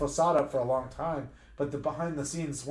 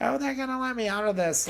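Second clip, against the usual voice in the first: mock annoying, grating put-on voice; 9 semitones higher than usual. Quoting how a convinced man said they'd let him out: annoying imitation. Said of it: "in his voice, like".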